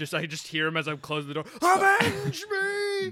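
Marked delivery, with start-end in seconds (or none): 1.6-3.1 shrill, booming, very loud, high, dramatic yell. Joking about a dad calling out as the door closes: imitating someone yelling. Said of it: "I wish my dad would just yell that".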